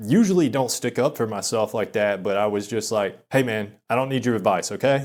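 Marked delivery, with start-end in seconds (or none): 3.3-5.1 put-on stern tone. Retelling telling a sparring partner off: imitating own stern reply. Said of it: "I would say sternly".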